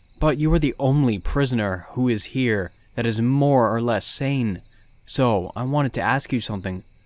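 ordinary delivery

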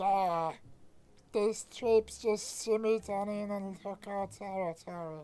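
high, horrible, unpleasant creature voice. In a game stream, a character the players meet speaks: horrible voice. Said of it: "He's hoping everything's okay. / His voice is horrible".

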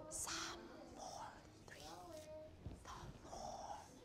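small, quiet voice. Leading a class in repeating a verse: small voice. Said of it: "Let's do this with a small voice".

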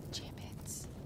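soft unvoiced whisper of gibbets.

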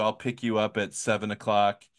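ordinary delivery

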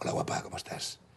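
put-on Spanish executive tone. Retelling approaching a woman in character as a Spanish executive, put-on Spanish executive tone. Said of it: "con ese tonito".

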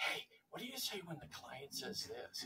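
put-on whisper. Retelling clients who phoned from hiding: imitating someone whispering. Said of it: "I had a few call me whispering saying".

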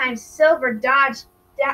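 plain reading voice

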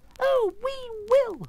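squeaky, shrill, very high mice crying together. The mice answer their Queen all together, in a shrill chorus. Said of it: "cried all the mice in a shrill chorus".

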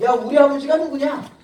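loud, confident boasting tone.

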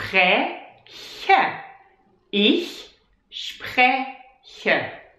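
spreche, pronounced slowly and carefully, every sound laid out. Speaker demonstrating a german verb for learners to repeat; slow careful pronunciation. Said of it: "let's say it slowly".

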